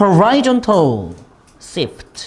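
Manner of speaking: key phrase stretched out slowly.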